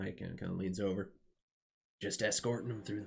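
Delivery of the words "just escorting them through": put-on American Southern accent. Voicing a character explaining the escort job, in a southern accent. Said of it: "why did I go to a southern accent on that one?".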